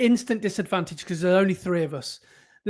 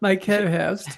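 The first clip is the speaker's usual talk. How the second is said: put-on posh, formal, mock-posh voice. Teasing the host about the intro, the co-host repeats the words in mock-posh imitation. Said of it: "That was very posh, very formal".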